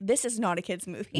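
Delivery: ordinary delivery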